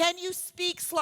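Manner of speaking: impatient, rude, demanding tone.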